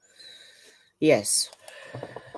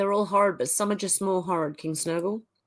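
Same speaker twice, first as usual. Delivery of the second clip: ordinary delivery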